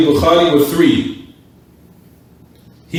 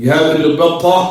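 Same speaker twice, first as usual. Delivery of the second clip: usual speaking voice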